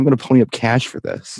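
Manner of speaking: normal talking voice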